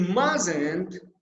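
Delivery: heavy emphasis landing on mustn't. Explaining sentence stress with an example sentence, stress on mustn't. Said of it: "the main stress is in can't and in the mustn't".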